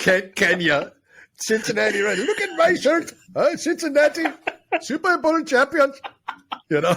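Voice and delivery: terrible fake Indian accent. Joking about Cincinnati shirts worn in India: terrible Indian accent. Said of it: "Terrible Indian accent".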